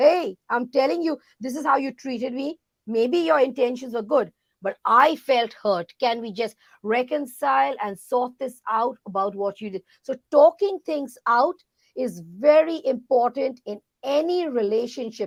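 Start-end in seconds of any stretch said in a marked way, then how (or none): none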